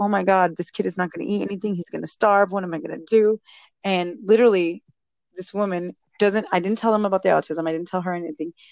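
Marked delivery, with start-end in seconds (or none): 0.0-3.4 acted, mock crying voice. A parent recalling worrying months before the child started school, acting out own past crying. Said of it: "I'm crying like".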